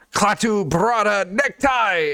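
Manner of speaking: high yell in a strange alien-sounding language. Running a game, voicing an alien that charges two players, strange alien yell. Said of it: "this alien yells out in its strange alien tongue".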